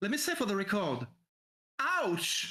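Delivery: very annoyed, irritated, swooping voice. A character standing up and massaging a sore muscle speaks out loud, very annoyed voice. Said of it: "in a very annoyed voice".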